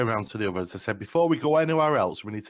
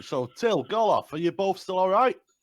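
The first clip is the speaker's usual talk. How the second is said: shouting down, pitched up; 9 semitones higher than usual. A player's character checks on two companions far below, shouting down. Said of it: "So I'm shouting down".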